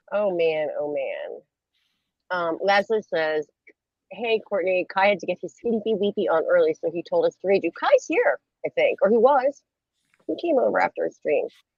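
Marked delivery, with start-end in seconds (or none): none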